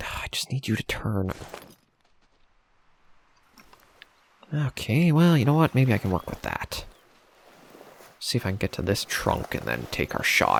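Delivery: hushed, quiet voice. Waiting to take a shot, talking quietly. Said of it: "sorry I'm talking so quiet".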